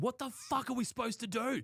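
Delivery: mock enraged, furious, shrill scream, very high. Retelling what was screamed after a bad call at third, retelling a scream. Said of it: "And I've just screamed".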